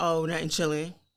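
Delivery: acted, snide, stank, attitude-laden dismissive tone. Retelling a texting exchange with a man who turned cold: imitating a stank attitude. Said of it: "a stank attitude".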